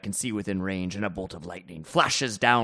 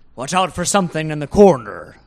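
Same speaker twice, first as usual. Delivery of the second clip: very loud shouted yell; 8 semitones higher, 12 dB louder than usual. A player in a game warns Derridan in character, shouting to Derridan. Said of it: "I would like to shout to Derridan".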